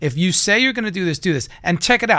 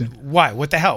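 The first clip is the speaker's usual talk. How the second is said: put-on disdainful tone, lower pitch; 4 semitones lower than usual. Acting out own past reply to being asked what's wrong: imitating own disdainful reply. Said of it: "I have this disdain for everything".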